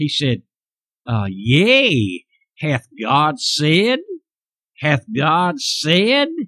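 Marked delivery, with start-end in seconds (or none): 1.3-6.3 mocking, very slow, swooping sarcastic drawl. Retelling the serpent questioning Eve: imitating Satan's sarcastic voice. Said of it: "Can't you just smell the sarcasm in his".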